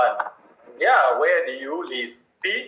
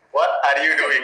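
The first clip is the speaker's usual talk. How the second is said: plain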